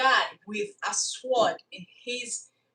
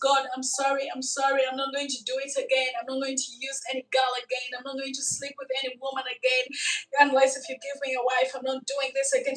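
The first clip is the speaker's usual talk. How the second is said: put-on tearful, sobbing, crying voice; 3 semitones higher than usual. Retelling how a man begged god for forgiveness: imitating someone crying while pleading. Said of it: "he started crying and crying and crying".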